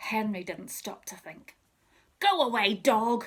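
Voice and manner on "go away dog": loud, nastiest, horrid howling voice. A boy yells at a huge dog that ran up to another child: horrid howling voice. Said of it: "he howled in his most horrid voice".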